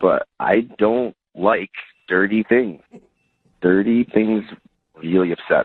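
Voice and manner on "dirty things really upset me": creepy, unsettling voice. Answering the others in a group conversation: creepy. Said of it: "it sounded super creepy the way you said that".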